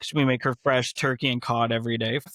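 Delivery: ordinary talk, nothing marked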